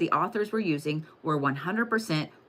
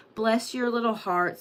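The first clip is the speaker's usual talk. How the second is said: sanctimonious, pitched-up Southern twang; 5 semitones higher than usual. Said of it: "Southern twang".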